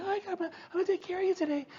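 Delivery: very high, thin, quiet little voice. Showing the kind of voice older listeners can't hear, high-pitched voice. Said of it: "might have high-pitched voices".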